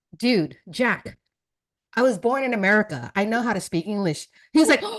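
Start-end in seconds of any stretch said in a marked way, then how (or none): none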